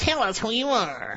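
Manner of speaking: tiny cartoon villain voice, high and soft. Reading the high priest's demand to Jesus aloud; little cartoon bad-guy voice. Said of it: "that little voice from those cartoons".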